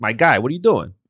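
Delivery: put-on New York accent. Showing how they talk to a friend, new york accent impression. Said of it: "doing like a New York impression".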